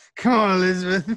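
indistinct, high-pitched mumbling. Imagining a poorly acted live-action Booker DeWitt: mumbling Booker DeWitt. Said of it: "he just mumbles".

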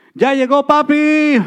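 mock very high, loud shout, papi stretched long. Describing coming home from work and calling out to the kids: retelling a scream. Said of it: "I open the door and I scream out".

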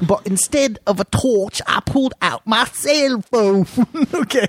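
high, slow mock Cockney accent.

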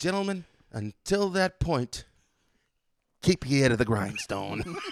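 really bad, loud, put-on Boston accent. Quoting a film scene together, in a really bad boston accent. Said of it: "With our really bad Boston accents".

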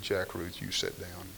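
firm, quiet, low, stern voice. Retelling what she said to him in the classroom: imitating her not getting loud. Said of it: "She didn't get loud".

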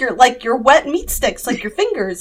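dead-serious, straight delivery. Retelling what the speaker said to him, keeping dead serious without laughing. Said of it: "I was like dead serious".

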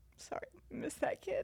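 half-whispered through tears, soft, breathy, voice breaking. Remembering daily FaceTimes with Leonte, the speaker apologizes while crying. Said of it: "Here I am crying again".

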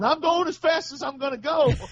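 mock shrill, high-pitched yell. Retelling being lapped in a race on the track, reenacting yelling in helmet. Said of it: "I'm yelling in my helmet going".

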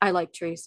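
curt, brief, absent-minded, distracted tone. Voicing a character concentrating on something else: brief, distracted tone. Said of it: "in a very sort of brief, distracted sort of tone".

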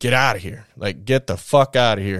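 ordinary talk, nothing marked

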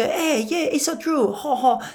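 put-on French accent. Retelling answering a little French kid, slipping into a French accent. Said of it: "I naturally start to take on their accent".

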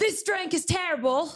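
very high, angry yell in British accent. Urged by others to do the accent and yell it, a Gordon Ramsay yell impression. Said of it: "yell no you have to yell".

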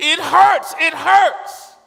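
drawn-out, very loud, very high anguished cry. Retelling how a man yelled each time he touched his body, retelling an anguished yell. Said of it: "he would yell out in anguish".

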